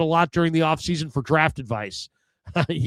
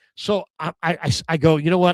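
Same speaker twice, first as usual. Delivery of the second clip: usual speaking voice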